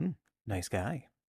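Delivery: low mutter under the breath, aside. Voicing a character, remarking on an intimidating man: muttered under breath. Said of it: "under my breath would just be like".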